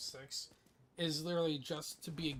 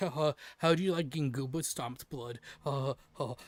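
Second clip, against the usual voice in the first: loud, acted, teasing taunt with chuckling throughout; 8 dB louder than usual. Retelling how a friend taunted him in a match: imitating someone chuckling. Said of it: "He's chuckling about it".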